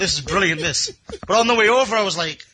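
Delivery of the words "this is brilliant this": plain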